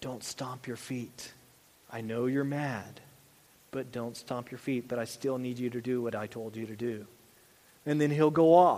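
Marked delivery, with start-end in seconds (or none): 0.0-7.1 whispered. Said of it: "lean down and whisper in his ear".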